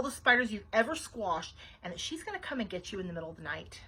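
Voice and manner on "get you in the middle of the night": ordinary delivery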